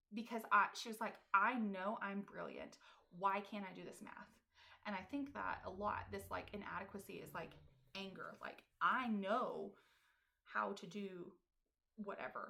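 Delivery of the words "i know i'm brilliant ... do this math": put-on tearful crying voice, louder. Retelling a sister crying over college algebra: imitating someone crying. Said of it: "she was crying and was like".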